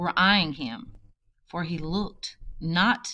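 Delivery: ordinary delivery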